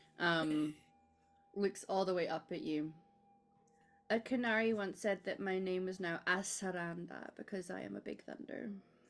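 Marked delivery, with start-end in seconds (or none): 4.1-8.7 put-on small dwarven child's little-kid voice. A little dwarven kid looks all the way up at Cass, little dwarven kid voice. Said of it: "she's real small because she's a little dwarven kid".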